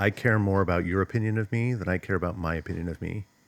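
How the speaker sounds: ordinary talk, nothing marked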